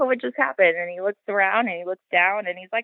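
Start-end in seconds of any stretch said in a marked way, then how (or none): 0.0-0.8 casual, unbothered, pitched-up, nonchalant puzzlement. Retelling how another person reacted to a thrown potato: imitating a nonchalant tone. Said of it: "he's so nonchalant".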